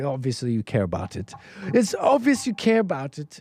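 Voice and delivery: terrible, bad put-on English accent. Mocking a TV interviewer's reaction: terrible Piers Morgan accent. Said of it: "I'm doing his accent terrible".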